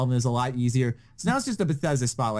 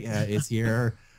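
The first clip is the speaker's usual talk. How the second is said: deadpan, flat, underwhelmed, unenthusiastic monotone; 3 semitones lower than usual. Mocking an unenthusiastic reaction to a game announcement: imitating a calm, unenthusiastic reaction. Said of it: "do you really think I'd be like".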